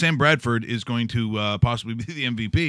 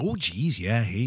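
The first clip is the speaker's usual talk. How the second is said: very slow, stretched-out put-on Minnesota drawl; 4 dB quieter than usual. Imitating how the friendly locals talk: imitating a Minnesota accent. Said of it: "They have that accent that they have in, uh, Fargo".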